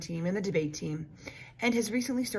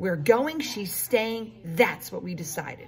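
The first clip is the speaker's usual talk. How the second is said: strong, firm, unbending voice; 3 dB louder than usual. Reading a story, the narrator voices Lulu's dad answering Lulu's mom in a strong, firm voice. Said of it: "in a strong, firm voice".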